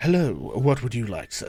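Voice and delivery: low, refined, well-spoken voice. Voicing a half-orc barkeep at a packed bar: strangely well-spoken barkeep voice. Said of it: "her accent does not fit in".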